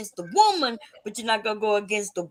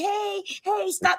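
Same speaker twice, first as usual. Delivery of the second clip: put-on old woman voice, high pitched; 10 semitones higher than usual. Describing trying to break up a fight, in an old woman voice. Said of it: "I can put on my old woman voice".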